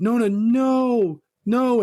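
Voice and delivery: high screaming. Retelling a movie scene where the family begs an old woman: imitating people screaming. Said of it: "screaming, like".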